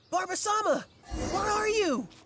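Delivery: loud yelling. Calling out to find Barbara: yelling. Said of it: "Unless we could start yelling too".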